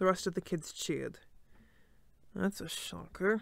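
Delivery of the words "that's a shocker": mumbled, muttered under breath, slower. Narrator reads Leo's remark as the other kids cheer, muttered. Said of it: "Leo muttered".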